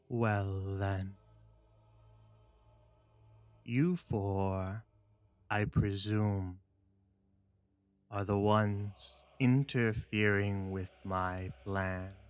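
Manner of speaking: put-on creaking voice like an old tree. A storyteller voices a woman addressing four people, creaking voice like an old tree. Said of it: "with a sort of creaking voice, like an old tree".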